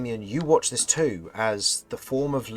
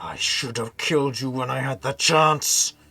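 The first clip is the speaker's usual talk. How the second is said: spoken through tightly clenched teeth; 3 semitones higher, 4 dB louder than usual. A player swings at Raylo, and the storyteller voices Raylo's reply through gritted teeth. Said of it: "As you hear him with gritted teeth".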